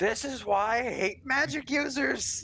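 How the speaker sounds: yell. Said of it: "I yell back".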